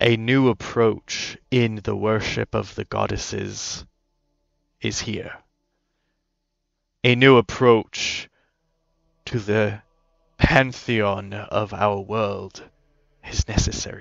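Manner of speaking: low, deep voice of a big man. Game master voicing a figure in a group, deep male voice. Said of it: "But this deep voice says".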